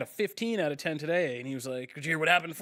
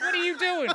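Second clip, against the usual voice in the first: put-on horror-film yelling, pitched higher; 13 semitones higher, 3 dB louder than usual. Retelling a nightmare of yelling at a character running across a stormy ocean: imitating yelling horror movie lines.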